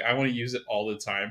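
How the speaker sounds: usual speaking voice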